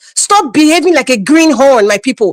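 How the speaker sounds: normal talking voice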